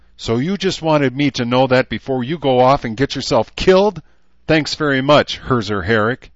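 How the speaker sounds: high-pitched, anger boiling over. A woman answers a man's confession of love, angry. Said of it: "a stunned expression that faded to anger".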